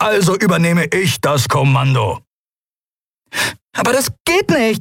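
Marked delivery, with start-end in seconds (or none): 3.7-4.8 very high-pitched voice. Nelen objects when another character announces he is taking command, protesting. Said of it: "protestierte Nelen".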